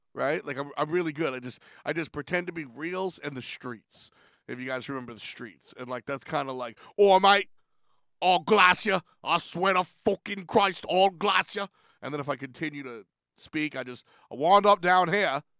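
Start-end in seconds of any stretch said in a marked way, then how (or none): 7.0-11.7 put-on Australian accent, higher, louder, slower. Speaker showing how he slips into an accent, put-on Australian accent. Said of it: "the quicker I fall into Australian".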